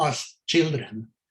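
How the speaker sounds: put-on "as children" slowed and weighted, "children" stressed.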